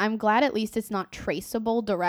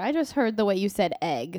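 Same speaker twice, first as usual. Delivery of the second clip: ordinary talk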